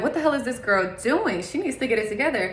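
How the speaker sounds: ordinary talk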